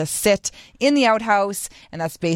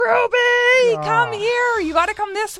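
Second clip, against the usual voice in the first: shrill, very high screaming, name drawn out. Retelling calling ruby over at the finish line with her favorite toy, screaming. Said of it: "and I was screaming".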